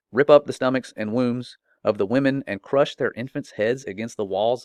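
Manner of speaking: normal talking voice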